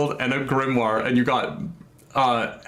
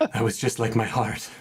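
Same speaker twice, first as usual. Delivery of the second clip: hushed, soft half-whisper; 3 semitones lower than usual. Voicing a character who appears briefly in the ceiling: half-whisper. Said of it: "you just hear the whisper".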